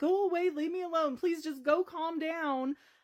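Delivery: high, sobbing, tearful begging voice, crying through it. Describing a recording of an ex-husband threatening them, the speaker reenacts: imitating own sobbing. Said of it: "I am like sobbing".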